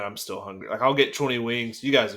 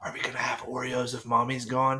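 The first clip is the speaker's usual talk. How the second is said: soft, secretive, confiding half-whisper; 2 semitones higher, 4 dB quieter than usual. Recounting a shared snack habit, retelling how she half-whispers a question. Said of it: "she's like she whispers".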